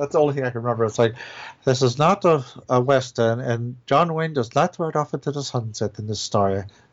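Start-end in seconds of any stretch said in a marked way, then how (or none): 1.6-6.6 slow, unhurried, deliberate, drawn-out on every word. Quoting the only movie dialogue remembered: Alan Rickman voice. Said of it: "I was doing Alan Rickman for her".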